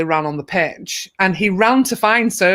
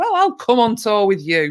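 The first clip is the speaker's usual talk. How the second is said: put-on playful, joking, sing-song delivery; 3 semitones higher than usual. Recalling his answer when asked what he would do next; retelling a joking reply. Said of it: "And I just jokingly said".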